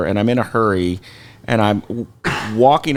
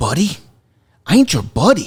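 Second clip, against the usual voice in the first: high, hostile, aggressive in-your-face tough-guy tone; 6 semitones higher than usual. Retelling a stranger getting up in their face: imitating an angry confrontation. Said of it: "he gets up in my face".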